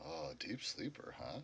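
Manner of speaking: very quiet, hushed whisper. Voicing a character who turns to another character: whispering. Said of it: "turn and whisper to Art".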